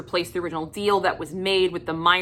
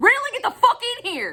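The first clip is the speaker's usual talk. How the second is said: mock very high, full-throated, top-of-the-lungs scream. Showing how he'd call someone in from inside a house, screaming at the top of lungs. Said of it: "I'm gonna be screaming at the top of my lungs".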